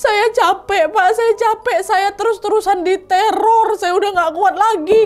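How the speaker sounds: high, tearful, exhausted-sounding voice.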